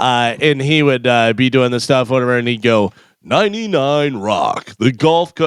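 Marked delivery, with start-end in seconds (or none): 3.2-5.5 big, drawn-out eighties rock radio announcer voice. Retelling a voice-over guy reading a station line: imitating Joe Kelly's big eighties voice. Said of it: "That old, kind of big eighties voice".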